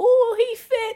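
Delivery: screaming, very loud, shrill cheer. Speaker retells a loud woman at a baseball park after a hit: imitating a woman cheering. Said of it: "Cheering and ting".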